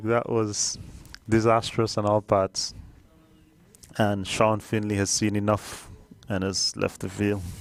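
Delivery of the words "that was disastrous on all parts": helpless laughing through the words. Commentating on a misfield that was disastrous on all parts, laughing while talking. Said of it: "I can't stop laughing".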